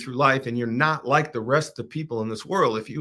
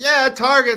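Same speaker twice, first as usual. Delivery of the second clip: put-on many children shrieking at once, high and loud; 12 semitones higher, 7 dB louder than usual. Retelling the kids' reaction to going to Target: imitating kids screaming. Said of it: "And they start screaming".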